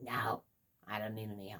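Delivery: put-on angry tone. Retelling how an adult refused help while cooking one-handed: imitating an angry reply. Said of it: "she's all pissed off".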